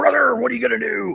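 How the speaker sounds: loud, rough, raspy, very high-pitched belted shout. Retelling shouting back at the guy: shouting as Hulk Hogan. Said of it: "So I shout out".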